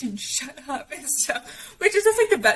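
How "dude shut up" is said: soft, hushed whisper. Retelling nights of keeping quiet while parents slept: imitating a whisper. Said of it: "whispering and being like".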